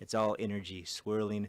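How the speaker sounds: plain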